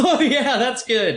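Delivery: high, laughing fake chuckle. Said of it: "by just laughing and going".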